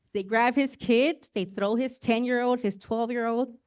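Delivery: ordinary delivery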